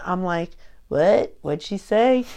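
normal talking voice

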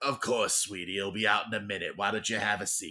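gravelly, rough bartender character voice. Telling a story, voicing the bartender replying to Cole, gravelly bartender voice. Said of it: "Always gotta have a gravelly voice bartender".

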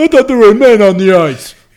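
loud, high-pitched bellow. Imitating a hockey commentator complaining about players: Don Cherry impression. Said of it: "that's my Don Cherry impression".

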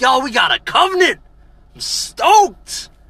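very high, very loud mock thrilled shout. Retelling a Bible story as Moses returns: imitating excited Moses; imitating an excited prophet. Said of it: "He's all excited".

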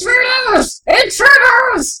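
very high, shrill, screeching goblin yell. Narrator voicing a goblin who turns and shouts to his compatriots: goblin shouting alarm. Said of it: "turns around, and shouts at his compatriots".

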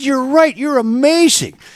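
very high, loud, squealing bad comic impression.

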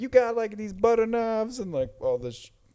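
put-on mocking yell. Retelling how she yelled at him, making fun of him; imitating her mocking yell. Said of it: "So she's like yelling at him".

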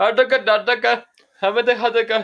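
very high, loud, put-on Indian accent gibberish. Recounting a scam call, mimicking how the caller talked: imitating an Indian accent. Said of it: "talking to me in like some Indian accent".

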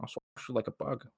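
whispered, utterly flat, emotionless deadpan. Retelling how someone flexed on him at a premiere: mimicking emotionless George Lucas. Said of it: "without emotion".

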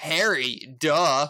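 loud, sarcastic, condescending talking-down tone. Giving an example answer to a quiz question: condescending sarcastic remark. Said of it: "some condescending, um, sarcastic remark".

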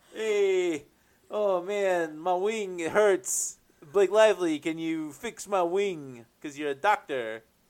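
loud put-on Bronx accent. Voicing an improvised bird character with a hurt wing, in a bronx accent. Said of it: "I don't know why I'm giving him a Bronx accent".

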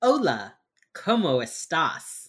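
put-on bad Spanish accent. Imitating a character's clumsy phone greeting: imitating Penelope's really bad Spanish.

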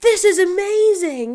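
very high, very loud exclaiming voice. Retelling pouncing on an item while staff watched, saying it very loudly. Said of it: "I said very loudly".

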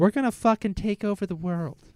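loose, off-target put-on Alaskan Canadian accent. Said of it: "That didn't sound like her at all".

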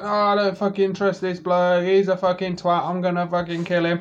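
suspicious, aggressive, hostile, distrustful voice. Imitating a player's reaction to a stranger: imitating Sassy. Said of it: "Sassy would have done that thing where he's like".

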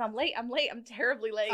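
ordinary delivery

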